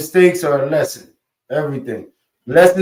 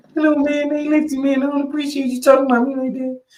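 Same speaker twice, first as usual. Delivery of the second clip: mock very high cartoon puppet-frog voice; 10 semitones higher, 4 dB quieter than usual. Mocking a man who confronts people with that voice, in a mocking Kermit the Frog voice. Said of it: "You ain't supposed to run up on nobody with that voice".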